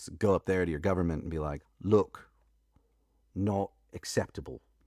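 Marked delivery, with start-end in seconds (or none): 1.8-4.6 terrible, put-on Australian accent. Speaker tells Alicia what to say to her government, in a terrible English Australian accent. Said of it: "my terrible switch into English Australian accent".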